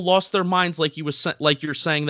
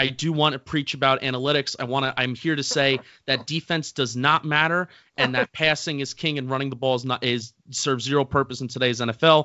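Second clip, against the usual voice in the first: ordinary talk, nothing marked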